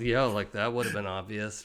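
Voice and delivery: put-on irritated muttering. Retelling someone's reaction about the intercom, mimicking annoyed mumbling to himself. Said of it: "just mumbling to himself like... Just so annoyed".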